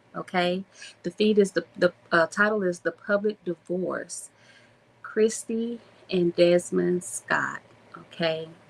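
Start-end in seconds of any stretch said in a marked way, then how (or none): 5.0-7.6 heavy, sorrowful, mournful tone. Host reading the couple's names from a TikTok feed titled The Public Divorce, sorrowful. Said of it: "I said that with so much sorrow in my voice".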